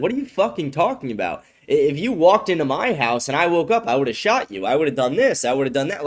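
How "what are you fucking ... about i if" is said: plain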